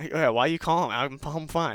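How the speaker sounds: mock half-chuckle. Retelling a phone check-in call: retelling the other man's chuckling reply. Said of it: "he almost like chuckled".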